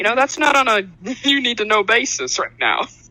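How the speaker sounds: cheeky, sassy brush-off tone. Asked about her character's personality, a player answers in character: sassy. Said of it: "some sass".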